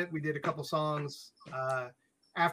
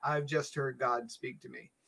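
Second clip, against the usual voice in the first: usual speaking voice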